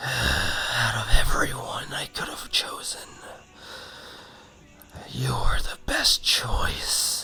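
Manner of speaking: raspy, scratchy voice. Telling a story, the narrator voices the same voice speaking again in darkness, raspy and scratchy. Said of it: "it says in a raspy, scratchy voice".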